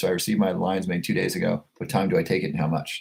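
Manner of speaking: ordinary delivery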